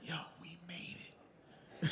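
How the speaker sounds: very soft, quiet whisper.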